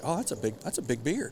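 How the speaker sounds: put-on offhand, unbothered, very nonchalant casual tone. Retelling a partner looking through binoculars: imitating a very nonchalant remark. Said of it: "very nonchalantly".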